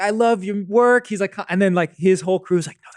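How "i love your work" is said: high-pitched hollering yell. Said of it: "He's just like yelling at her".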